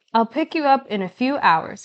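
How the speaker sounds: plain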